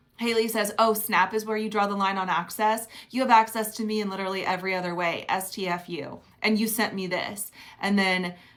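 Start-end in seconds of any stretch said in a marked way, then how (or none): none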